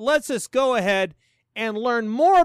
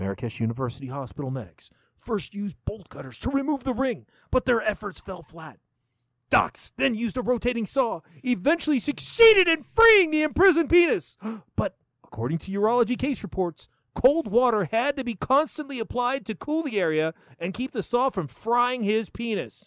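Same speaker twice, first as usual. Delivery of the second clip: big, dramatic movie-trailer narrator voice; 4 dB quieter than usual. Reading a news report aloud for drama, in the movie voice. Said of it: "I need to do this in like the movie voice".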